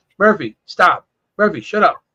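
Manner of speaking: ordinary talk, nothing marked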